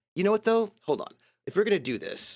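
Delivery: ordinary talk, nothing marked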